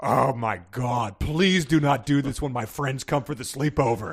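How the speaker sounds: sarcastic, snide voice. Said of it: "saying sarcastic things like".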